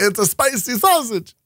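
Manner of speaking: very high-pitched put-on Italian accent. Joking around in conversation, in an Italian accent. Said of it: "I don't know why I went with an Italian accent there".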